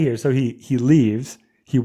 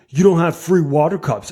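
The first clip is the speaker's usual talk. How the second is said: put-on yelling, pitched higher; 4 semitones higher than usual. Retelling how a man at the counter started yelling: imitating a man yelling. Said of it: "he just starts yelling".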